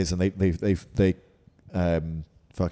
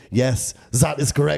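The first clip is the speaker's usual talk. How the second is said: funny, loud, high-pitched fake German accent; 7 semitones higher, 5 dB louder than usual. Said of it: "he's got a funny accent".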